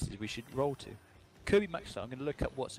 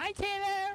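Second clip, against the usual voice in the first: put-on very high-pitched girlish voice. Retelling what was heard in the background: imitating a girl's greeting. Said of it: "I just hear some, like".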